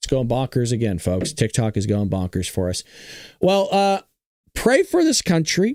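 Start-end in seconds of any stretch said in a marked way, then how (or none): 3.4-5.8 very high-pitched voice, breaking and cracking. Speaker addressing his audience, voice cracking. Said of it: "My voice cracked a little bit".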